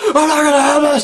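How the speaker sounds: very high, shrill, unhinged yelling. Retelling how the villain Diaz yells at people: imitating Diaz yelling. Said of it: "when he starts yelling at people, he's like".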